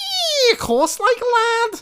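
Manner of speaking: put-on Scouse accent, very high and slow drawl. Asked to show a Scouse accent, doing a Steven Gerrard Scouse impression. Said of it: "the one that's ever in my head ready is Scouse".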